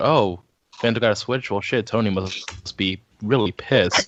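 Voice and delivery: ordinary talk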